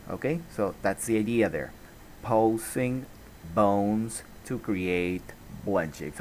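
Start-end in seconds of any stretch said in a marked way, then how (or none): 2.2-6.2 very slow, drawn-out phrasing. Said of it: "I'm going to repeat that very slowly".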